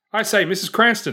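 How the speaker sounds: high, loud calling shout. A player describes their character calling up to mrs. cranston: shouting. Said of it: "he'll probably shout".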